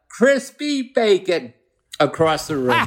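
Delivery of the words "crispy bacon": put-on, high, raised yell, calling out loudly. Retelling a reply yelled back across a breakfast room: retelling own yell. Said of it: "I yell out".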